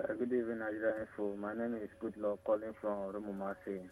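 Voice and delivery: quiet, subdued voice. A caller greets the radio station and gives his name, sounding low. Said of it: "you sound so low".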